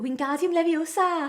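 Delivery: attempted Welsh accent. Showing how hard a Welsh accent is to pull off, Welsh accent. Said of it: "How can I do a Welsh accent?".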